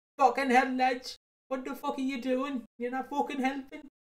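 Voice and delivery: put-on high-pitched Welsh lad's mild yell. Retelling a funny Facebook clip, imitating a Welsh lad who screams at it. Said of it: "a Welsh lad who actually screams at it like".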